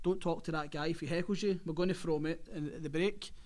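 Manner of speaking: ordinary talk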